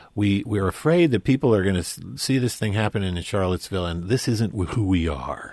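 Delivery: ordinary delivery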